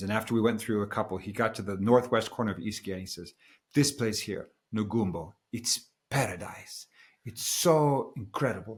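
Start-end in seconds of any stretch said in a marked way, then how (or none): 3.7-8.8 slow, drawn-out, put-on Italian accent. Retelling what a man he asked for recommendations said, in an Italian accent. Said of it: "I'm going to stop with the Italian accent".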